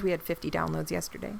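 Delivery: soft, understated, quietly proud tone. A podcast host, inviting someone to introduce themselves, quietly proud. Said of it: "(quietly proud)".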